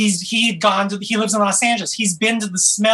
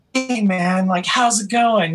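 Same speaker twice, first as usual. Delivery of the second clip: put-on British rock-star accent. Describing how a rock star talks, the speaker does a British rock-star accent. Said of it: "like British, like, rock star royalty".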